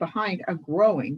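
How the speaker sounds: ordinary delivery, nothing marked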